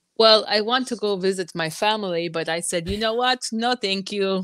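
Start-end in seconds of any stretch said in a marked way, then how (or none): 2.9-4.4 rough, put-on Ukrainian accent. Quoting own refusal to visit family, in a Ukrainian accent. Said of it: "Is that your Ukrainian accent?".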